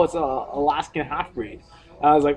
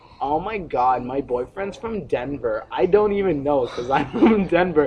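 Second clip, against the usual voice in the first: ordinary talk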